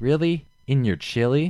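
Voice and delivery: slow, drawn-out, high female radio ad voice. Retelling a radio ad heard while driving: imitating the female voice in the ad. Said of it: "the female voice is like".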